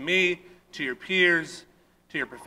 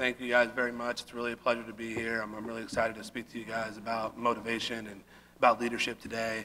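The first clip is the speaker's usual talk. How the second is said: low, flat, dull, droning monotone; 5 semitones lower, 7 dB quieter than usual. Retelling how an invited speaker opened his talk, mimicking a boring monotone. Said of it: "in the most boring, monotone voice you can imagine".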